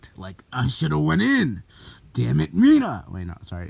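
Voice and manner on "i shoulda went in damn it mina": creaky, very loud bellow. Acting out an angry character in a fan story: Bakugo voice. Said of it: "that's my Bakugo voice".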